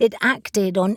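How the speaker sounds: ordinary delivery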